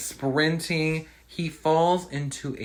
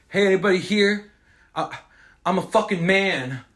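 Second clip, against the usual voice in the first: put-on yelling, higher and louder; 7 semitones higher, 4 dB louder than usual. Retelling a character yelling down into a dark basement: imitating someone yelling.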